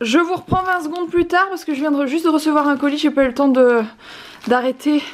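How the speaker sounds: winded, high, panting between words. Speaker has just received a package and talks to viewers, out of breath. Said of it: "Je suis essoufflée".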